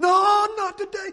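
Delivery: very high, loud, frantic, panicked screaming. Preaching about men in a boat fleeing a ghost, imitating panicked hollering. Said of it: "Just hollering, screaming".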